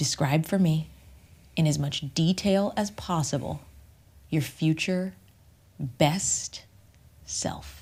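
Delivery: very slow, drawn out, pausing within phrases. Speaker demonstrates how they ask the question: speaking really slowly. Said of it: "I ask it really slow like that".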